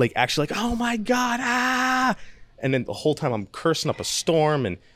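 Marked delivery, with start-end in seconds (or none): 0.6-2.2 agonised, very high, drawn-out scream of real pain. Retelling being got out of bed while in pain, retelling screaming in pain. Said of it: "screaming in pain".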